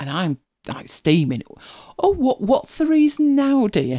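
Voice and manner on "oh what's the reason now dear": acted, high, slow speech through gritted teeth. Retelling a phone call with Mike, imitating own reply through gritted teeth. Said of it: "through gritted teeth".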